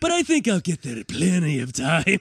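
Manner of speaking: put-on folksy politician voice. Acting out the pilot's announcement of stops: Ronald Reagan voice. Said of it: "Is Ronald Reagan driving the plane?".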